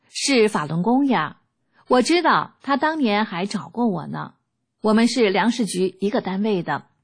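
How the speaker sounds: plain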